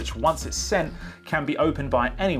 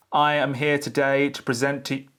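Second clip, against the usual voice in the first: one-note droning, flat level monotone delivery. Demonstrating a presentation coach that gives tone feedback, flat monotone delivery. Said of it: "my tone is flat".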